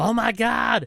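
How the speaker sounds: put-on very high, excited maniac-style yell. Recounting watching a show, the speaker acts out his reaction: retelling yelling at the TV. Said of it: "I yelled at the T V again".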